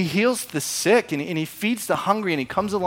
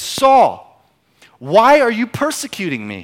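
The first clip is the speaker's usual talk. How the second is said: resounding, booming, slow voice with swooping pitch; 4 semitones higher, 7 dB louder than usual. Retelling Saul on the road to Damascus, the voice from the light speaks, booming. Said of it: "a booming voice says".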